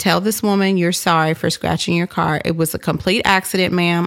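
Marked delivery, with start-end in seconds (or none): none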